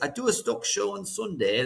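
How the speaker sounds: effortful, best-attempt put-on English accent. Video host plugging his sunday stock show, best english accent. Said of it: "It's my best English accent there".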